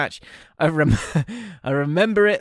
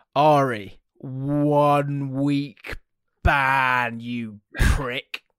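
very slow, deliberate, drawn-out delivery. Imagining a ban being announced: imitating words said slowly. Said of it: "these words slowly but effectively".

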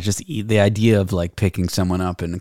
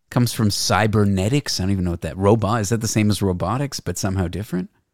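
ordinary talk

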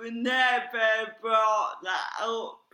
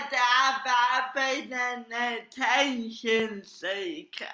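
normal talking voice

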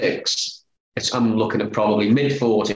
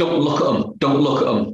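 shouting, pitched higher; 4 semitones higher than usual. Recalling a man in the players' tunnel before a game, the speaker retells a shout. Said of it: "And he's shouting".

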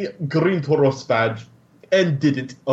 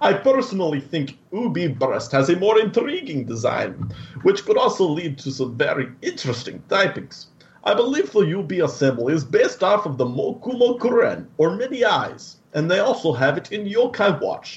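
put-on Russian mobster accent, laid on thick; 3 semitones higher than usual. Reading a listener's letter to the podcast in a Russian mobster voice. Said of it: "That is Russian mobster".

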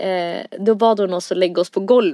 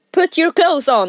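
mock shouting, loud and yelled; 8 semitones higher than usual. Retelling a man in a police costume ordering inmates, retelling a shouted order. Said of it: "skrek han".

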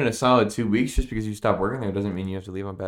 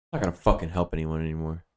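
put-on mutter under breath, lower; 3 semitones lower than usual. Retelling what a coworker muttered under her breath: imitating a coworker muttering under breath. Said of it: "she said under her breath".

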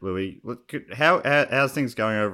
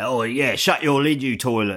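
slow, put-on, crazy old-style Cockney accent; 4 dB louder than usual. Adding an example of Cockney talk: Cockney accent. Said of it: "calling people a toilet".

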